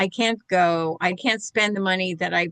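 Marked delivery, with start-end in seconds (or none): 0.0-1.0 acted-out sobbing, slower. Retelling own reply to a woman, acting out past sobbing. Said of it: "And I just burst out sobbing".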